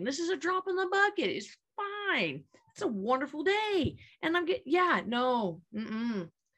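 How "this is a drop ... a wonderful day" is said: breezy, carefree tone. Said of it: "I'm like".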